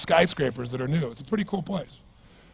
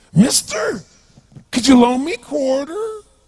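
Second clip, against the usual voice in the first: put-on bizarre drunk-sounding street-guy voice, high and loud. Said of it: "it was this really bizarre looking sounding voice".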